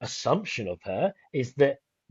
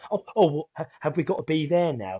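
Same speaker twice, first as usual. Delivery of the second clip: faked distracted, dismissive manner; 3 semitones higher than usual. Retelling how she looked away from Martin: imitating someone pretending to be distracted. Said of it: "pretending to talk to him".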